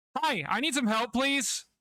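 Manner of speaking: very loud, very high, eardrum-blasting shout. Showing how someone would ask for help right in a person's ear, very loud shouting. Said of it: "you're gonna blow out their eardrums".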